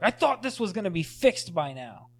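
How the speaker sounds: acted angry outburst. Retelling a movie scene where an actor hits his head on the wall, mock-angry movie line. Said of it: "he's all angry".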